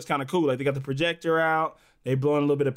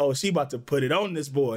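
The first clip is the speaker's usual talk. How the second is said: ordinary talk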